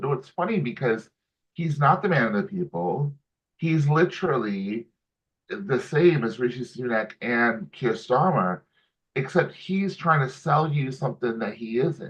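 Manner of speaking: ordinary talk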